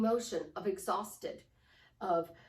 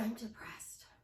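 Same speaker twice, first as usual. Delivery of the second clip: much quieter, soft, lowered, subdued voice; 8 dB quieter than usual. Guiding listeners through a posture exercise, demonstrating a soft, lowered voice. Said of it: "Lower your head, soften your voice, drop your shoulders".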